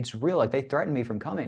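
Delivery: ordinary delivery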